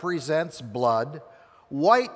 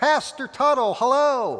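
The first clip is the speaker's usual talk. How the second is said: acted, very high, loud, ringing call-out; 10 semitones higher, 4 dB louder than usual. Retelling how the barbershop owner greeted him at the door, loud announcing voice. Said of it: "would always announce in a pretty loud voice".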